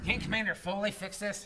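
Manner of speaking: plain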